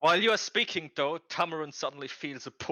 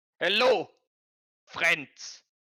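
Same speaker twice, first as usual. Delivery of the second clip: put-on monster orc voice with a German accent; 4 semitones higher, 4 dB louder than usual. Game master voicing an orc who grabs the players by the shoulders, German accent. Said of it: "why do they have a German accent?".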